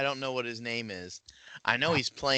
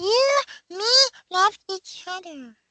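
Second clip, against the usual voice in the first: very high, loud, squeaky puppet voice; 6 dB louder than usual. Pushed by the others to do it, the speaker attempts an Elmo voice. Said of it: "I give that a partial Elmo".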